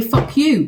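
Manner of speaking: put-on tough, defiant, big grown-woman voice. Asking what viewers want from her, put-on big woman voice. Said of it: "be a big woman and say".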